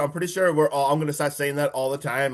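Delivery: normal talking voice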